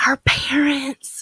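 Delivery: hushed whisper. Talking to a group about caring for family members: whispering. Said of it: "I'm gonna whisper that?".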